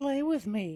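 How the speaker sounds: put-on creepy, eerie doll voice. Friends talk about a creepy doll; one quotes it: creepy doll voice. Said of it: "doll voice".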